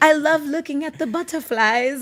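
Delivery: mock child's English accent. Retelling what the kids said, imitating a child's English accent. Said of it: "why do you speak like this?".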